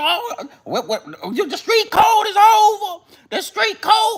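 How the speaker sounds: put-on very high, New York street-guy accent. Mocking how New York dudes talk about the South: imitating New York dudes' talk. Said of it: "y'all talk like that".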